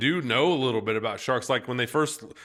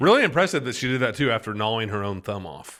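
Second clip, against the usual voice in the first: plain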